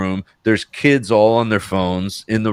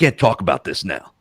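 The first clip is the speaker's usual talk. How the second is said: mock rude, nasty, snapping tone; 3 semitones lower than usual. Retelling how a man who didn't recognize him got real nasty: nasty snap. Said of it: "gets real nasty with me".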